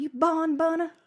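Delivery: put-on hollering in a Southern accent. Recounting how the group yells at the character Ben Quick: retelling a Southern-accent yell. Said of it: "we'll be yelling at him".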